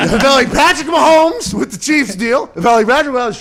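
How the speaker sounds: high, loud laughing through the words.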